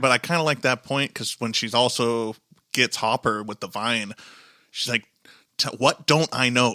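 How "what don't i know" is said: earnest, begging, acted-out pleading tone. Discussing a show scene, repeating a character's question to Hopper, imitating someone pleading. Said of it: "a pleading manner".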